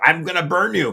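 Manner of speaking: acted, furious, loud, high scream at full tilt. Retelling a man threatening a camera crew; imitating someone screaming. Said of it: "literally screaming at them".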